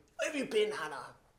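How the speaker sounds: overbearing, domineering, demanding tone. Acting out asking one of my girls, home late: acting overbearing. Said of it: "I say in an overbearing way".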